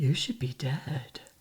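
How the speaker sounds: very low-pitched, creepy voice. Retelling the neighbor popping over their shared wall after the accident, imitating creepy neighbor. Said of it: "he'd like pop over the wall like this and he'd go".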